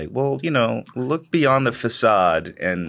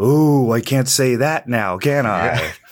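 eerie, ghostly put-on voice; 3 semitones higher, 4 dB louder than usual. Describing how someone berates an audience, doing his spooky voice. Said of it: "he do the spooky voice".

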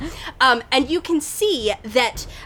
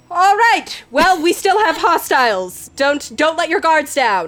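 commanding voice, raised and projected; 4 semitones higher, 4 dB louder than usual. Voicing General Flora speaking up after Malachi's remark: raised voice. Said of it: "General Flora raises her voice and she's like".

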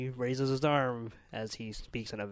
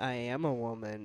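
ordinary talk, nothing marked

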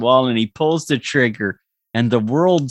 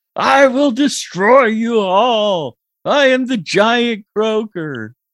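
high, drawn-out monster yell, like a rampaging giant; 10 semitones higher, 3 dB louder than usual. Telling a story where Croker yells at a restaurant hostess, Croker yelling. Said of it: "He's yelling at the hostess there".

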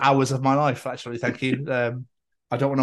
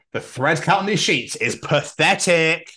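snooty, snobby high-class voice; 3 semitones higher, 3 dB louder than usual. Playing the bougie man under a child's bed, in a bougie voice. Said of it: "I loved your bougie voice".

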